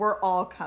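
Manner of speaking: normal talking voice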